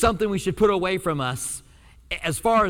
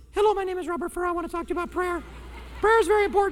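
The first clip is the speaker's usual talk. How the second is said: very high-pitched voice, words rattled off quickly; 12 semitones higher than usual. Speaker imitates how he sounded on an old cassette tape, his old really high voice. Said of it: "My voice was really high".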